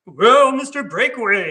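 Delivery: loud, booming TV-style announcer voice. Retelling how he answered someone asking his lunch order; Don Pardo announcer voice. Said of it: "And then we go into a voice".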